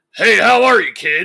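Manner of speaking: loud, growled delivery. Retelling meeting Vince McMahon, who greeted him: Vince McMahon growl. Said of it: "the Vince growl is real".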